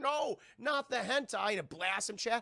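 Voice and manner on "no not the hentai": high, slow, stretched-out mock anguished plea. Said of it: "He's like".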